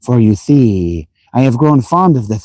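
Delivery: ordinary delivery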